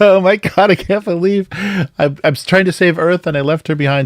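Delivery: mock very high, tearful blubbering sob. Acting out the Interstellar scene where he sees his grown-up daughter, imitating Matthew McConaughey bawling. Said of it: "just like bawling his eyes out".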